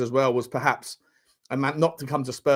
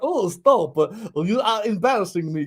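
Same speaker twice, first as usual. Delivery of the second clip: put-on Russian accent, higher; 6 semitones higher than usual. Retelling a woman's reply to a flirting man, in a Russian accent. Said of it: "she sounds like she's from Russia".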